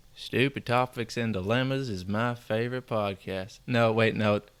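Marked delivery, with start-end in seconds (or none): 0.2-3.6 put-on slow Southern cowboy accent, drawling. Trying a voice on the podcast sentence, in a Southern cowboy accent. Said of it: "the most like Southern cowboy I've ever heard".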